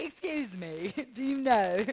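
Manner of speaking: fake British accent, slow and carefully drawn out. Retelling asking a guy for directions at eighteen, in a put-on british accent. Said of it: "So I put on a British accent".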